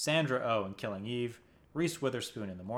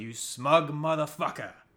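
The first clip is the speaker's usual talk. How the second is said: put-on, shouted line reading; 4 semitones higher, 5 dB louder than usual. Recalling a favorite line reading of the season, retelling John Turturro's yell. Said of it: "he yells at Milchick".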